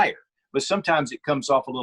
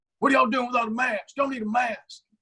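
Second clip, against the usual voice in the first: fake yell, pitched high. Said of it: "yelling, going".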